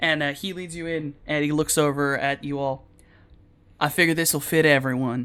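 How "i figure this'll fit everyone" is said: put-on southern drawl accent. Voicing a character who leads the group into an elevator: southern accent. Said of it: "I need to stop giving southern accents to people".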